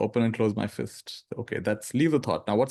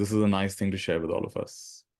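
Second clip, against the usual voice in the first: ordinary talk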